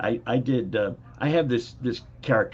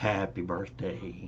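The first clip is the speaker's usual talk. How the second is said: soft, polished on-air radio announcer voice; 3 semitones lower, 6 dB quieter than usual. The host brings a friend on to say happy birthday: best radio voice. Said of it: "in his best radio voice".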